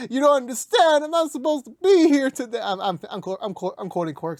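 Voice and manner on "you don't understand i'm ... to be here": fake sobbing, higher. Imagining being the crying new inmate from The Shawshank Redemption: mock crying. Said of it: "I would just be crying like".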